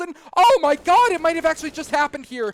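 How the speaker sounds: loud voice, breaking and cracking. Calling a round as a team's defense cracks open: voice cracking. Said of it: "My voice is cracking".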